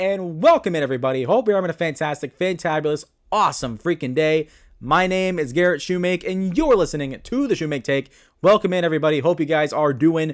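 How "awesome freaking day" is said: plain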